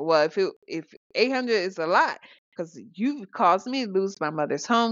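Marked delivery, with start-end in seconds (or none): none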